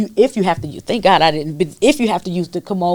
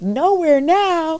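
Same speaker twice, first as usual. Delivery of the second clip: put-on very high, tearful sob-talk; 10 semitones higher than usual. Retelling answering the intake worker about work: retelling own crying words. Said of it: "I'm just crying".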